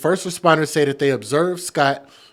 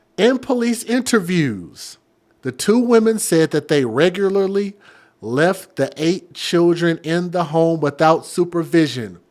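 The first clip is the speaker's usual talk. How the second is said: slow, drawn-out, careful, deliberate delivery; 2 semitones higher than usual. Repeating a police-interview detail a second time, speaking slower. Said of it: "let me say this slower".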